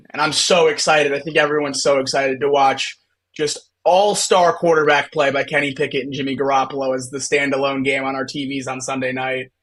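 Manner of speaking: ordinary delivery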